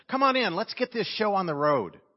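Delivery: mock firm tone. Retelling a story of a man hurrying an elevator: imitating a firm command. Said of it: "I firmly said".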